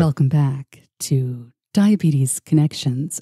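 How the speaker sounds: public radio host delivery. Asked about impressions, the guest does an NPR host impersonation. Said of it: "I do have an NPR impersonation".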